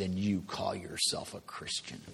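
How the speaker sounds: mad, upset, accusing, reproachful mother voice. Retelling a mother's reply to a hard decision: imitating an upset, mad mother. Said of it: "this voice that just said".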